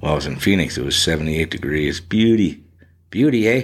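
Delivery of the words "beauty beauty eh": all-in, put-on Canadian accent. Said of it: "now I'm getting all the Canadian".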